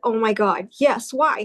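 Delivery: acted panicked voice. Retelling answering an emergency room doctor's question, retelling own panicked reply. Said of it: "Calm down".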